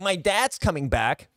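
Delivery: put-on slow, weird American accent. Mocking an actor's American accent in a movie trailer: imitating Tom Holland's American accent. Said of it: "Tom Holland was like".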